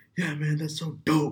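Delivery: put-on shout. Recounting someone yelling in a quiet dance-class lobby, retell the yell. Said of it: "just yells like".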